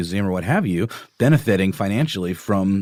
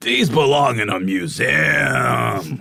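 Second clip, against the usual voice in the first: creaky, slow, rough movie-hero voice, stretched-out "museum"; 5 semitones higher than usual. Asked to say the Indiana Jones line: Harrison Ford as Indiana Jones. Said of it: "will you say the line?".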